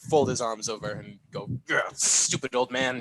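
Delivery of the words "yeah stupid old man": grumpy, grumbling voice. Walking back to the bar in character, muttering about the uncle: grumpy. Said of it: "grumpily walk back to the bar".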